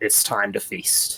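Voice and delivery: whispered. A player's character speaking in Draconic to the Bahir, whispering. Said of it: "gonna whisper him into Draconic".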